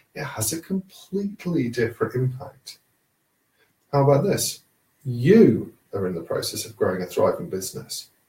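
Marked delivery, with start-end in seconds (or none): 5.1-8.1 strong emphasis on "you" at the start. Same sentence reworked to change its impact: strong stress on you. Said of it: "now I've emphasized the you".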